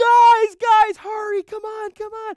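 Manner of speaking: frantic, panicked shriek, very high, very loud. Recounting urging friends into the car as a truck pulls up, retelling panicked screaming. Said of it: "I'm screaming my head out".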